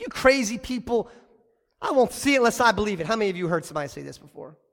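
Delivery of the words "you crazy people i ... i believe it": mock, heavy, dripping, scoffing sarcasm. Acting out the doubting disciple's reply: imitating sarcastic Thomas. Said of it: "He's being sarcastic".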